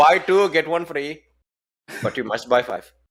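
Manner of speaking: put-on, mock Indian accent. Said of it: "we all love the Indian accent".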